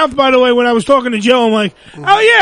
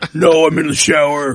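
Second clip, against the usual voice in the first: put-on man's voice, very low, fake deep; 11 semitones lower than usual. Imitating a caller who puts on a dude's voice, in a fake dude's voice. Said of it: "they try to put on a dude's voice".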